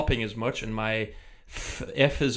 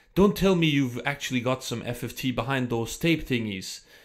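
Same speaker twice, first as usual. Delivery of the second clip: terrible fake Dutch accent. Repeating a question Immortal asked the speaker, terrible Dutch accent as Immortal. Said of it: "this is my terrible uh, Dutch accent".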